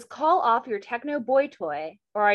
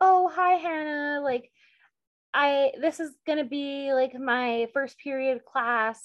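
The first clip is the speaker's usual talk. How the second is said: put-on timid, shy voice, pitched higher; 5 semitones higher than usual. Retelling how Kate acted at a new school: imitating Kate's timid, shy voice. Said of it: "she's acting all timid and shy".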